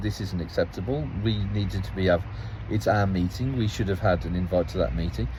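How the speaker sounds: ordinary delivery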